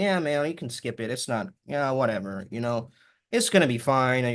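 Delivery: unenergetic, coaxing, whiny voice. Speaker giving advice acts out the voice in your head, imitating a whiny inner voice. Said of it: "whiny voice in your head that tells you".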